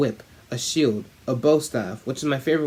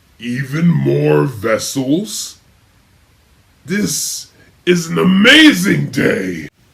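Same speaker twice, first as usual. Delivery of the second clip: big, booming, very loud cheering shout; 9 dB louder than usual. Reading a story aloud, voicing a creature who cheers: deep cheering voice. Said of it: "She heard a deep voice cheer".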